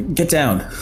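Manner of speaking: shouting in character voice. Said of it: "and I'm gonna shout".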